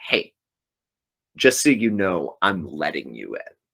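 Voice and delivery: haunting witch voice, said offhandedly. Retelling how the Bell Witch let the soldiers pass: Bell Witch voice. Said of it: "the voice of the Bell Witch is like".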